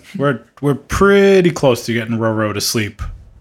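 ordinary talk

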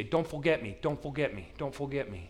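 put-on tiny, sweet, cute little-kid voice. Parent retelling what his young son said as the parent got ready to go, imitating Cormac's little-kid voice. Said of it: "he'd say it with a little kid's voice".

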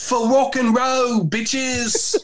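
high, drawn-out, put-on English accent. Speaker retells what he said after throwing his guitar, in an English accent. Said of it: "i go in an english accent".

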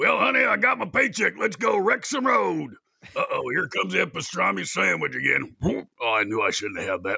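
rough, swinging high voice. Repeating pinball lines as the character Red: Red's voice. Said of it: "where I play Red".

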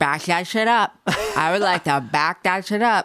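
mouthy, wet-mouthed, saliva-heavy delivery. Quoting a Real Housewives of New York line, in Dorinda Medley voice. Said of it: "I like your Dorinda voice".

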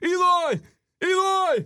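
very high, loud holler. Showing what he shouts at a player the entire college basketball game, imitating Brad Brownell yelling. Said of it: "Burnell just yells".

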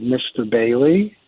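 calm, very measured, deliberate, carefully paced delivery. Retelling own words to a verbal bully: retelling a measured tone. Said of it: "in a very measured tone".

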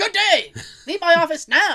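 high, shrill, loud freaking-out outburst. Retelling the film's ending where Wonka starts freaking out: imitating Gene Wilder's Wonka freaking out. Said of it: "when he starts freaking out, he's like".

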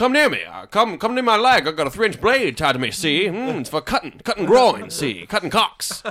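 blustering cartoon rooster voice. Acting out a cockfight, taunting the other rooster in a Foghorn Leghorn voice. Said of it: "A cockfight with Foghorn Leghorn".

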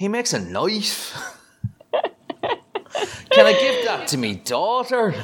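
fake Irish accent, high and swooping. Mocking a man's supposed Norwegian accent, doing an Irish-sounding accent impression. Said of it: "the like 100% Irish accent".

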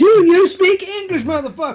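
put-on very high-pitched, loud, with faint British accent. Joining in when the others joke about speaking English, do a slightly British Samuel L. Jackson impression. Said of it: "that was the widest rendition of it that I ever heard".

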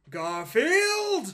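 very loud, very high theatrical declamation. Asked to give a dramatic reading of a comic-strip speech bubble: dramatic reading. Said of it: "give us a dramatic reading of a speech bubble".

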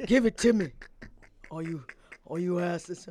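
low-pitched voice. Addressing the others in the group: deep voice. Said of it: "Why your voice go so deep?".

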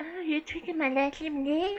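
put-on high lisping voice. Asked to do the boxer's voice for the commercial line: Mike Tyson voice. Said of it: "No, Mike Tyson".

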